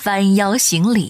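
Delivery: ordinary delivery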